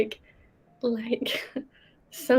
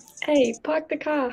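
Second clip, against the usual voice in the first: put-on Boston accent; 3 semitones higher than usual. Asked about a Boston accent, trying it out in a Boston accent. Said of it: "I parked the car in a Boston accent".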